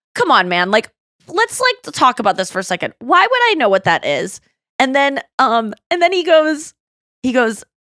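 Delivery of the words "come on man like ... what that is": ordinary delivery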